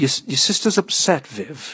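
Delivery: slow, high, halting, stuttering stammer. Robin speaks up to viv, stammering. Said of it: "Robin stammered".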